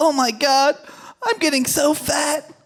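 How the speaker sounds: put-on emotional lament. Retelling a friend looking at a picture of herself: imitating an emotional friend. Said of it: "she was getting all emotional".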